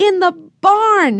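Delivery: very high, excited, yelled shout. A narrator reads the children's reply to mr. alden; shouted. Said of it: "shouted the children".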